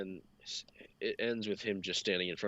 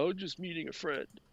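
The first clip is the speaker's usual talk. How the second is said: high, tearful voice on the verge of crying; 9 semitones higher than usual. Retelling how Todd answered at his car: imitating someone about to cry. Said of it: "Almost like he's gonna cry".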